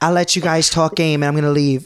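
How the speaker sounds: bad put-on Australian accent. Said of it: "I can't do an Australian accent".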